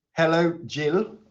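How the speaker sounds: put-on, attempted English accent. Trying a line after being asked for an english accent: put-on english accent. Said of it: "say something now in the best English accent".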